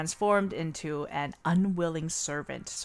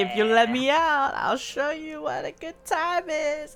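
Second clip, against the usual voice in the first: very high, flirty demon voice; 10 semitones higher than usual. Retelling a visual novel's demon asking to be let out: imitating a flirty demon. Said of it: "he's like".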